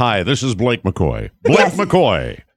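swooping cartoon anchorman voice. [name] imitating a newscaster he has never heard, Simpsons-style Blake McCoy voice. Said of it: "it's a Simpsons voice".

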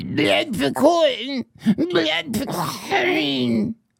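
creature voice of a kobold. Voicing a quote from a kobold union organizer, in Yix kobold voice. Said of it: "I'll do it in kobold voice".

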